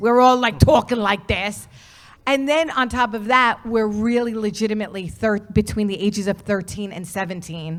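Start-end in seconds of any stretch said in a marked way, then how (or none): 0.0-1.7 loud New York accent, laid on for fun. Recalling the kids in the movie, in a New York accent. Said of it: "And then you get the New York accents".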